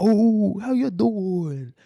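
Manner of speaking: terrible put-on Italian accent, very high, very slow. Imitating a man in Buenos Aires with Italian roots, horrible Italian accent. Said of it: "horrible Italian accent".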